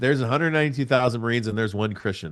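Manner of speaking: plain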